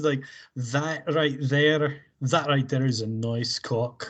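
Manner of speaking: slow Scottish accent, eased into gradually. Slipping into an accent, then asking whether it was Scottish: Scottish accent. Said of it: "so easy for me to slip into a Scottish accent".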